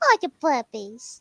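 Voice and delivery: put-on gushy, doting baby-talk voice. Showing how they talk to their dog: baby talk. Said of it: "But if I go".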